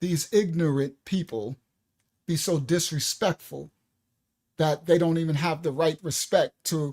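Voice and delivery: reined-in, slightly calmer delivery. Speaker rephrases an angry remark about people, saying it a little calmer. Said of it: "Let me say it a little calmer".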